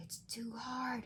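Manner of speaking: hushed whisper. Reading a story aloud, the worry character speaks: whispering. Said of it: "at first Worry whispers".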